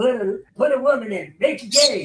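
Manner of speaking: bad high cartoon voice. Joking with the others about a meme: bad Cartman impersonation. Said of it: "It's a bad impersonation".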